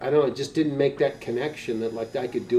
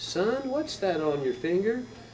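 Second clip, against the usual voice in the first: put-on high-pitched Texas accent with a drawl. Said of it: "She was from Texas and never lost her accent".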